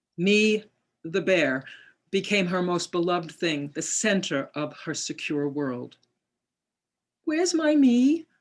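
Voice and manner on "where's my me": tiny, sweet, very high-pitched little voice. Reading aloud a daughter's question about her bear: imitating a sweet little voice. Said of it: "she would ask in a sweet little voice".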